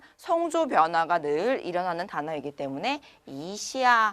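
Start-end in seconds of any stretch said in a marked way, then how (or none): 3.3-4.1 smooth, gentle rising glide on 이 of 이시아. Pointing out a tone change, say 이시아 with a smooth rise on 이. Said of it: "부드럽게 올라가면서 읽는 거".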